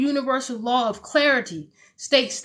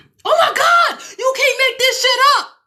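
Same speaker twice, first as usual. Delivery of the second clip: very high, shrill, swooping, thrilled excited shout; 12 semitones higher, 6 dB louder than usual. Talking to a listener, the speaker suddenly gets overexcited: loud excited shout. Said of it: "I didn't mean to be all loud in your ear".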